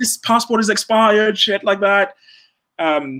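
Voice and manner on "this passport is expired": mock screaming, higher. Retelling how a passport officer screamed: imitating a guard screaming. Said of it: "he screamed at me".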